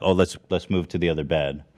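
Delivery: ordinary delivery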